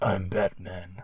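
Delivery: very gravelly, ground-out rough voice. Mocking the movie version of Batman: gravelly Batman voice. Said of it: "Batman with the very gravelly voice".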